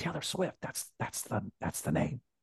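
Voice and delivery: mock whispering. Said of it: "He starts whispering".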